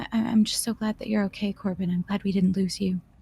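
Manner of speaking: softly whispered. A woman sitting alone in the tavern speaks to a companion, whispering. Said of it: "And she just whispers".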